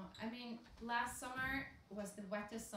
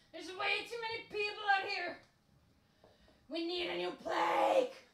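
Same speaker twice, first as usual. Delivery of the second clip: very loud, shrill, full-throated yell; 10 semitones higher, 11 dB louder than usual. Retelling sitting in bumper to bumper traffic in the car: imitating own yelling. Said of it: "just yelling".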